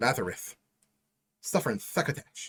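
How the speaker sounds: deliberate mock lisp. Reading lore text aloud, deliberate put-on lisp. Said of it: "I'm going to speak with a lisp".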